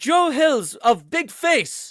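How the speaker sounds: put-on thick Eastern European accent, very loud and high. Retelling how a man repeated his name at their first meeting: thick Eastern European accent. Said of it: "he's got like this like thick Eastern European accent".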